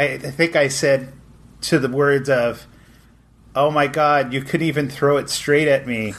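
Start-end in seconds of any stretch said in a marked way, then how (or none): none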